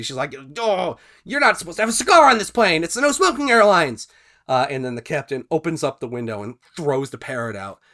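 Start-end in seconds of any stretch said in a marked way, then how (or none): 0.6-4.1 acted-out, very high, very loud, shrill angry shriek. Telling a joke, quoting the woman on the plane: acting out an angry woman. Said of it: "She's angry".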